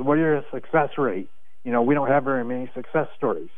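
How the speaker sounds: usual speaking voice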